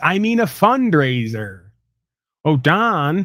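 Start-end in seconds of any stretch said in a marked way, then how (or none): 2.4-3.3 put-on old comedian voice, higher. Joking about a guest's Epstein remark, doing a Jack Benny voice. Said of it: "That's my Jack Benny".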